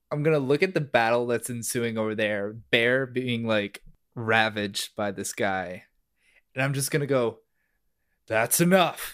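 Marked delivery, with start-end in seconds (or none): 8.2-9.1 big, loud, booming voice. Player's character confronting an enemy attacking Bear, booming voice. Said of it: "with sort of like a booming voice".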